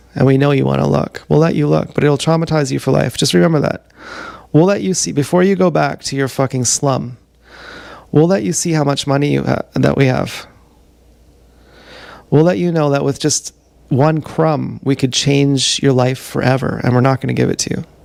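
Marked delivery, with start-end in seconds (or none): none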